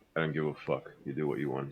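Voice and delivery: low, flat, utterly indifferent bored deadpan. Retelling how someone shrugged and answered, in a mock-bored voice. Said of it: "Dante has the most bored face".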